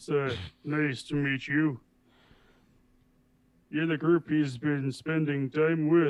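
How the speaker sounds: booming, full-voiced, very loud fatherly voice. Speaker voicing a father meeting the group his son spends time with, very deep voice. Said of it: "the father greets you in an even deeper toned voice".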